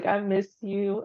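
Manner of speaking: choked up, voice on edge of crying. Telling a friend she misses her: on the verge of tears. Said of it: "And now I am gonna cry".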